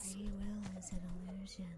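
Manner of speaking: eerie, creepy undead-sounding whisper. Voicing the undead who whisper at the player: eerie undead whisper. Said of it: "the undead just whisper at you".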